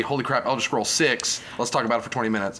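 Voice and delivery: ordinary talk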